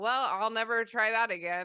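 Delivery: ordinary delivery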